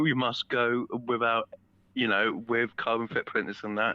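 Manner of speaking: normal talking voice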